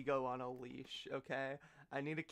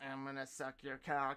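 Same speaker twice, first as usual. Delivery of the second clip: put-on voice-box distorted voice. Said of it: "[name] mocking Ken Kniff with the, ... the voice box thing".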